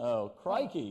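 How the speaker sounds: terrible fake Australian accent. Asked to try one, the speaker attempts a bad Australian accent. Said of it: "you try to do an Australian accent".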